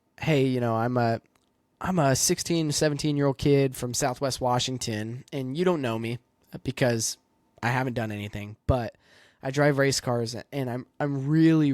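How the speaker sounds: ordinary talk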